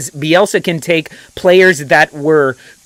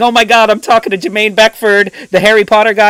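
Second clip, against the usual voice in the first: put-on high, starstruck, gushing fan voice; 5 semitones higher than usual. Retelling a podcast chat with a player, retelling own fanboy gushing. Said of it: "fanboy going".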